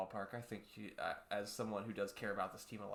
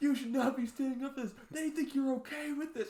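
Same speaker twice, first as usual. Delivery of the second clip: screaming, higher and louder; 10 dB louder than usual. Retelling a fan screaming at the whole section: imitating someone screaming. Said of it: "screaming at the whole section".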